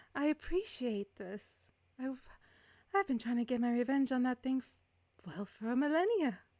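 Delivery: eerie spirit voice. Game master voices a ghost speaking to the party: very soft ghost voice. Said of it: "you guys all collectively hear a very soft voice".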